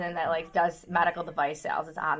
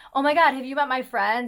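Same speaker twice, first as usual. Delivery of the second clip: flamboyant, showy, charismatic delivery, pitched up; 6 semitones higher, 6 dB louder than usual. Retelling a pickup coach's opening line at a bar: imitating a flamboyant, charismatic guy. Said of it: "he was dressed really flamboyant. He was being really charismatic".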